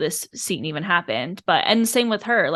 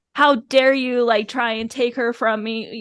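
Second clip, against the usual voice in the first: put-on indignant, furious, angry shout; 5 semitones higher than usual. Retelling a scene where a character is so angry he shouts: imitating an angry shout. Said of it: "he is freaking shouting at Rui. He is so angry".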